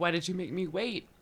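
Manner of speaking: choked-up crying voice. Recounting a personal experience, the speaker talks through tears: crying while talking. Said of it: "why am I crying?".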